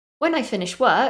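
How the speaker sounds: pitch rises on the word "work". English intonation lesson, first part of a sentence: rise at the end on work. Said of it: "at the end of the first part of that sentence, my voice went up".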